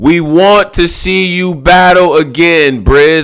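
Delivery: slow, loud pleading delivery.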